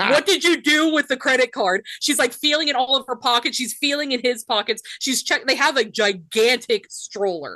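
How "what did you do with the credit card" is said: imitated yell, pitched higher. Retelling a tourist yelling at her husband about a card: imitating someone yelling. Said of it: "She's yelling at the husband".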